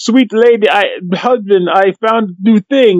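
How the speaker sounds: put-on Russian accent. Quoting what she tells the player, the speaker does a Russian spy accent. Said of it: "she sounds like a Russian spy".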